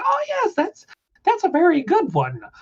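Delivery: high squeaky voice, swooping and sing-song. Retelling what Neso says about a picked-up helm, in Neso high squeaky voice. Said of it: "in his high squeaky voice".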